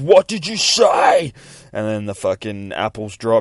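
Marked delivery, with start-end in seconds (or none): 0.0-1.3 shrill, booming, very high, drawn-out scream. Narrating a page, the angel in an astronaut outfit: screaming.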